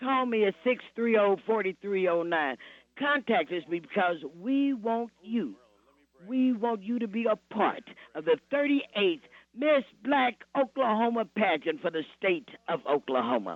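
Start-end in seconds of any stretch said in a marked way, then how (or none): 3.0-13.6 enthusiastic, eager, excited high-pitched voice. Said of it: "You sound excited about it".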